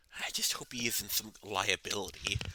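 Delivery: whispering aside. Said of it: "'cause I am whispering".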